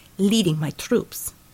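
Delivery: ordinary delivery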